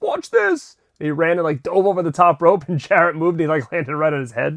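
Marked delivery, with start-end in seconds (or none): 0.0-0.8 very high, yelled, boastful voice. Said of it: "he just yells".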